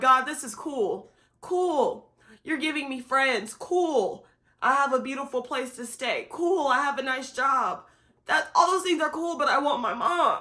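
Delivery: distressed, upset, worked-up venting tone. Retelling what was said to God while weeping: retelling own upset words. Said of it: "now I'm upset 'cause I'm like".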